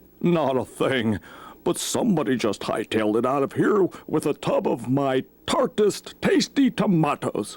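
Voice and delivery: very high put-on farm horse character voice. A horse in a read-aloud story answers the questioning narrator, horse character voice. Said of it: "[name] and I talked to the horses. / sir".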